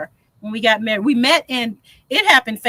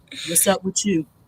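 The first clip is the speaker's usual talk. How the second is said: put-on man's voice, pitched lower; 3 semitones lower, 4 dB quieter than usual. Trying to sound like a man for the panel: imitating Jags. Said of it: "sound like Jags".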